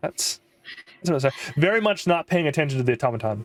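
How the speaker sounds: plain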